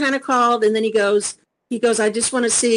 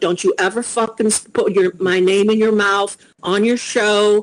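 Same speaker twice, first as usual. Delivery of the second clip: ordinary talk, nothing marked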